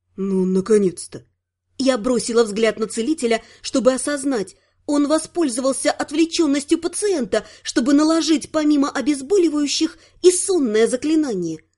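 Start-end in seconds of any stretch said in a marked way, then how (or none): 0.2-1.3 whispered, much lower pitch. As the patient finally drifts off to sleep, one onlooker remarks, whispered. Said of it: "а Вонгард прошептал".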